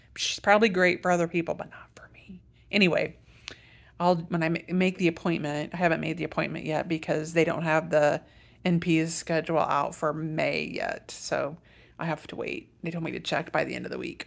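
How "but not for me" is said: hushed, very soft whisper under breath. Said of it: "I don't know why I'm whispering".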